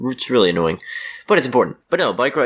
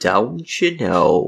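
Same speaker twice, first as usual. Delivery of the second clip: spaced out, spoken one word at a time. Repeating how the other speaker said the show's title: imitating Raquel's delivery. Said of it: "That's how you said it".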